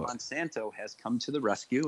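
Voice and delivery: normal talking voice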